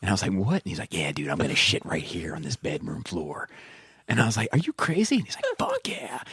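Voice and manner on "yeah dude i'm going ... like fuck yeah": put-on Eastern Shore movie-star impression. Retelling what a guy said in a dude's bedroom, in a Jack Nicholson impression. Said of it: "why does he sound like Jack?".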